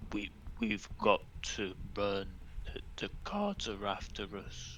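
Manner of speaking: very quiet, stammered whisper, barely above breath. Player character dragging Alice toward Silith and Olive, whispering. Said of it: "and I'm whispering".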